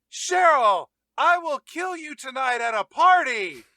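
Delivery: loud full shout. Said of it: "He shouted at her".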